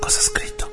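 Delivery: hushed, high, unvoiced whisper under the breath.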